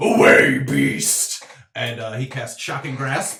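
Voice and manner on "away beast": very loud, deep, booming put-on voice. In a tabletop game scene, a character reaches out, deep voice from within. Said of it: "like a deep voice from inside that doesn't sound like him".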